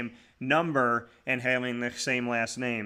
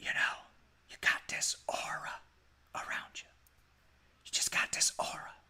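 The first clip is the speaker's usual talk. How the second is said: hushed whisper, then swelling louder. Retelling what Floyd Little said in his office: imitating Floyd Little whispering then louder. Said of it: "he would whisper and then he'd get louder".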